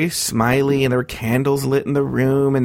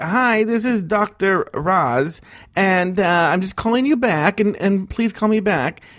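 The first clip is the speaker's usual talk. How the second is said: put-on very slow, high-pitched, elderly lady's voice; 5 semitones higher than usual. Retelling a voicemail she left, imitating Dr. Roz's old-lady voice. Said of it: "because she's an old lady".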